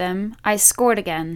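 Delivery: ordinary delivery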